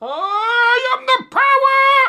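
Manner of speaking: booming, shrill, drawn-out battle cry, I stretched out. Retelling jumping out at the cats at home: imitating He-Man. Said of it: "trying to attack them like He-Man".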